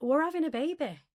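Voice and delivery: brash, cocky tone. Retelling own reply to a question: imitating own cocky tone. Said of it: "Because you were so cocky".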